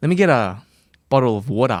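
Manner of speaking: best-effort put-on Australian accent. Asked to do his best australian accent, best australian accent. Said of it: "your best Australian accent".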